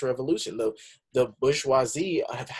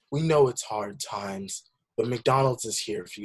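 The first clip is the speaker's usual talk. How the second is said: put-on mournful ad-narrator tone, sad. Retelling a McDonald's commercial heard during a break, imitating sad McDonald's ad voice. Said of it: "this guy in just this like sad voice".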